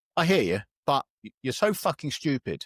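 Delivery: ordinary delivery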